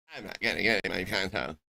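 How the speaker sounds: particular pointed tone. Mocking another player's refusal as a girlfriend's tone: imitating a girlfriend's tone. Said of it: "you ever heard her take that tone before?".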